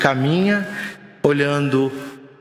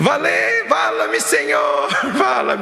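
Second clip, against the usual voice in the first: high, frantic, swooping, drawn-out desperate cry; 8 semitones higher than usual. Retelling a scene of despair, imitating Chico's desperate shout.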